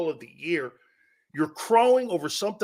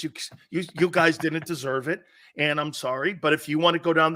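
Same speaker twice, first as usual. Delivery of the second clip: ordinary talk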